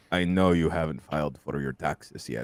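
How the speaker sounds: very low, hushed vampire voice. Retelling what someone said on a phone call: Dracula voice.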